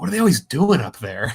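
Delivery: grumbling, muttered to oneself. Retelling a cartoon janitor cleaning up after falls: imitating muttering under breath. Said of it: "under his breath".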